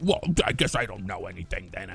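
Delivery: put-on angry voice. Retelling how people on the Discord react: imitating someone angry. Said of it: "they get very angry about it".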